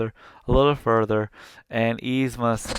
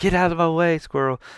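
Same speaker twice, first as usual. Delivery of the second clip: mock hollering, high-pitched, loud yell; 6 semitones higher than usual. Recounting a scene where a character yells at a squirrel; retelling a yell. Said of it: "yells at it".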